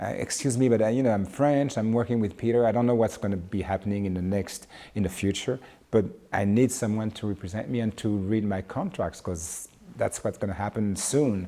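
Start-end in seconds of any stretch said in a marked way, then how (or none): none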